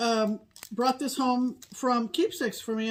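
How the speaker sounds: plain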